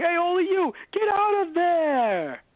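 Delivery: very high, slow, put-on New York accent. Retelling how an actor sounded when he got angry, a put-on New Yorker voice. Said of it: "doing the Yorker voice".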